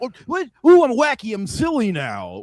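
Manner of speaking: very high, swooping, way too goofy wacky voice. Mocking a comedian's LA stage style: imitating Jake acting way too goofy. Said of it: "way too goofy".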